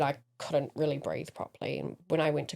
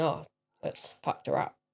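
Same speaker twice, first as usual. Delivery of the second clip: plain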